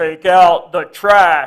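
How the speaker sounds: very loud, very slow, booming, deep macho Texas voice. Retelling how a dad gave chores to kids: imitating dad's deep macho Texas voice. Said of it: "this deep, macho Texas voice".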